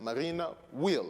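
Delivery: strong, hard stress on the word will. English lesson on expressing certainty: strong stress on will. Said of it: "so I use will to emphasize, to stress".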